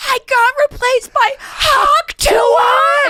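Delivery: long shrill scream, very high and slow. Retelling a video of an actress finding out she was replaced: imitating someone screaming. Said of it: "And she's screaming".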